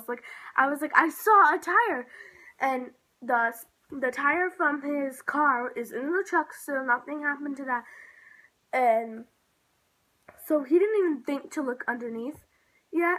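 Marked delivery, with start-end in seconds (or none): 0.9-2.1 insistent, half-yelled, loud and very drawn out. Retelling insisting to a dad about a tire: retelling yelling at someone. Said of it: "yelling at him almost".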